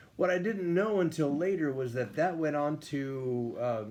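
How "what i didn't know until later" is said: ordinary delivery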